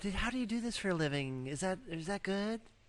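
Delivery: high, flamboyant put-on camp voice. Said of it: "You're like".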